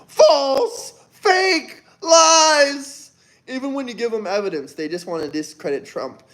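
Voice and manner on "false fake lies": shrill play-acted scream, lies drawn out. Mocking Democrats answering the list of ended wars: imitating screaming at top of lungs. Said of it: "scream at the top of their lungs".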